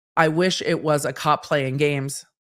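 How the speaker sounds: usual speaking voice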